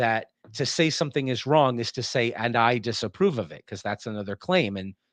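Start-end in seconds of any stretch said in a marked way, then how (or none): none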